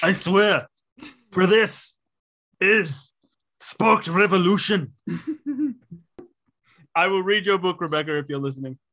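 heroic, rousing, stirring delivery. Addressing an author named Rebecca in a Braveheart-style battle speech. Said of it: "best Braveheart style speech you can muster".

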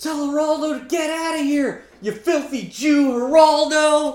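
very high, loud yell. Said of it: "sees it and she yells".

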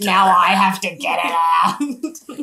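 mock aggressive, pretend angry tone. Imagining a mother in labour speaking to her husband: mock aggressive tone. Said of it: "in a much more aggressive tone".

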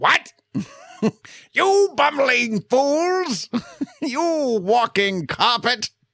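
very high, drawn-out villain voice. Talking about the actor who voices Skeletor, doing Skeletor voice. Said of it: "I'm trying my best to do the best impression of him".

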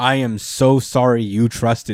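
calm, even, unbothered, slow delivery. Retelling a scene where Nimrod apologizes before killing Xavier, calmly imitating Nimrod. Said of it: "he says it so calm".

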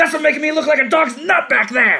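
very high, shrill, loud screaming outburst. Retelling a scene where Ray Purchase kicks someone: imitating Ray Purchase screaming. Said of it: "And then he screams at him".

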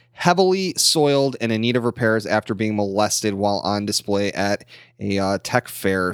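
plain

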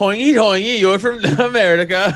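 loud put-on Swedish accent, gibberish-style. Speaker retells what a Norwegian couple said to them: Swedish Chef impression. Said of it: "I was totally doing Swedish chef".

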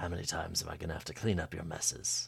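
bad put-on voice, too deep and rough. Recapping a scene, cutting to Crowley, in a bad Crowley impression. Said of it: "That's my bad Crowley impression. / It's too deep".

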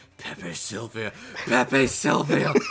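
deep, smooth, loud, grudging voice. Imagining a name said in a smooth, grudgy Liam O'Brien voice. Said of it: "with the very smooth, grudgy Liam O'Brien voice".

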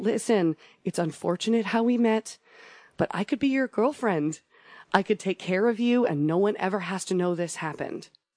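very gentle, soft speech. Retelling how a captive spoke to her captor: imitating very gentle talk. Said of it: "she would talk to him very gently, like a four-year-old".

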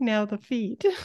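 play-acted, high, tearful, welling-up little voice. Discussing an episode, the speaker quotes Bender, imitating Bender's teary voice. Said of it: "He kind of says it in like a teary voice".

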